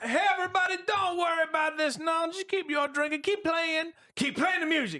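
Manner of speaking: very high, forced, falsely cheery smoothing tone. A storyteller voices the mayor addressing everybody, in a town mayor character voice. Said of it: "Uh, the mayor's like, / And the mayor goes, / You're a liar".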